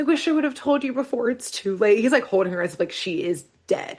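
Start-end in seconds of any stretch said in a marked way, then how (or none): 0.0-2.0 put-on heartbroken weeping, pitched high. Retelling a scene, acting out Dipper sobbing over Wendy: imitating Dipper crying. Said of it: "He starts crying".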